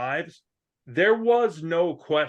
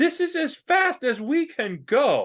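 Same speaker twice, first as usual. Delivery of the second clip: high, drawn-out, aghast and horrified; 9 semitones higher than usual. Voicing a worker at an alchemy bench who turns and looks, horrified. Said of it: "completely horrified".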